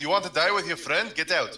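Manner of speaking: rapid, fast, intimidating, threatening yell. Voicing a character threatening a beaten man who is still standing: shouting. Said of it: "I'm going to shout at the".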